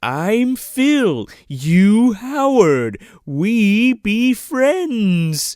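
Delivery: high, loud, very slow caveman-style broken English. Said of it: "he's like".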